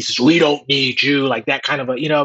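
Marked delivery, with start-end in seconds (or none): 0.2-1.3 deep mechanical entity voice. Speaker recounting a movie scene, quoting the Deus Ex Machina in a deep voice. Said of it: "With this deep voice".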